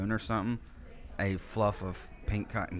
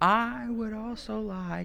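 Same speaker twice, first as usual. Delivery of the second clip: high, very slow, drawn-out shout; 9 semitones higher than usual. Speaker retells shouting out their drink order: retelling own shout. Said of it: "I just shouted it".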